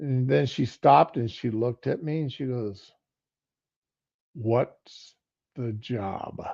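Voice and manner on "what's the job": wary, suspicious, breathy, hushed voice. Retelling how his wife asked about the job: imitating wife's suspicious tone. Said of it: "you know that voice a wife will have".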